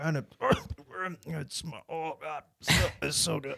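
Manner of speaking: forced, pained, stumbling. Describing a man's infomercial video, acting out his reaction: imitating someone forcing out praise. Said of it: "he's like clearly dying on it".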